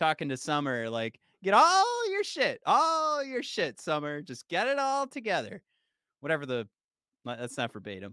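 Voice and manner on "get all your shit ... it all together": high yell with wild pitch swings up and down. Recalling a cartoon scene, yelling at a sister: imitating Morty yelling. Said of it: "just Morty yelling at".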